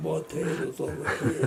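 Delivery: imitated deep voice. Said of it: "she had a low voice".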